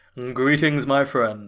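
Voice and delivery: loud, dramatic, grand narrator voice. Reading the Plan 9 from Outer Space script as a Criswell impression. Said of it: "my best impression of Criswell".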